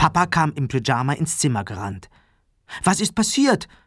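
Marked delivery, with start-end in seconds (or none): 2.8-3.6 alarmed, frightened, startled voice, pitched up. Narrating Papa rushing into the children's room, frightened. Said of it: "Fragte er erschrocken".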